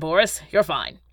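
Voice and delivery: ordinary talk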